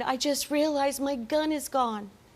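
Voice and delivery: put-on sobbing, tearful crying voice through the words. Retelling a call about a missing gun: imitating Christopher crying. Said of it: "he is crying like that and saying".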